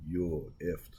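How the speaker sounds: imitated harsh, menacing-sounding voice. Retelling what an officer said after the speaker stepped on his foot: imitating a harsh threat. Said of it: "like that".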